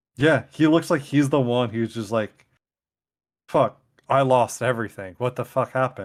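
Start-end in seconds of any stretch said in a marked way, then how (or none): none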